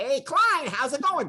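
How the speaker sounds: over-the-top, manic, very high nerdy cartoon worm voice. Recalling his voice role as a nerdy worm with a bow tie, over-the-top and manic. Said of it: "it was really over the top and manic and funny".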